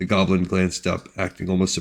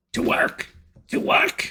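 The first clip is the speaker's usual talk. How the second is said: high, irritated, cranky goblin voice, snapping. Narrating a story, a voice snaps at the goblin workers: high-pitched irritated goblin voice. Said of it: "snapped a high-pitched, irritated voice".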